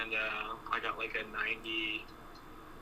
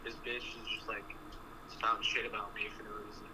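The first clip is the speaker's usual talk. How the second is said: ordinary talk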